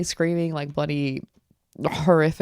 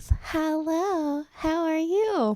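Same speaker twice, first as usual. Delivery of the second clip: put-on very slow, high-pitched, creepy little-girl voice; 12 semitones higher than usual. Showing how to scare people off, high creepy little-girl voice. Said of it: "creepy little girl with a high little voice".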